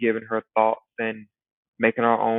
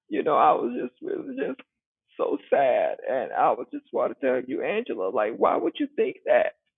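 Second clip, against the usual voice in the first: play-acted teary voice, close to tears; 4 semitones higher than usual. Imitating Shamea talking to Angela, sounding on the verge of crying: mock teary voice. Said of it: "it just sounds like she's just on the verge of crying".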